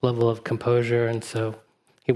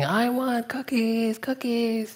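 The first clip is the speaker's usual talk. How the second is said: put-on very high, drawn-out, demanding toddler scream; 12 semitones higher than usual. Retelling a joke, imitating a toddler screaming in a store: toddler screaming. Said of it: "the toddler started screaming".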